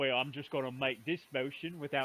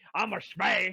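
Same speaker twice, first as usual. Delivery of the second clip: put-on fantasy orc brute voice; 4 semitones higher, 4 dB louder than usual. Retelling a brother's line from a game: orc voice. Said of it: "to say in an orc voice".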